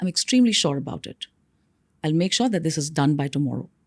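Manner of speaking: downward intonation, deep bass voice, assured. Speaker showing listeners how to speak, downward intonation with bass. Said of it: "Downward ... So the bass in your voice".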